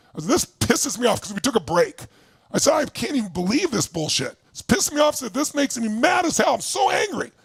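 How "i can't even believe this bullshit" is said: plain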